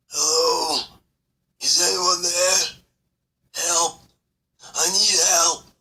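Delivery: exhausted, guttural, throaty calling, slow. Someone trapped in a debris-blocked corridor calls out for help, exhausted guttural voice. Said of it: "an exhausted, guttural voice calling".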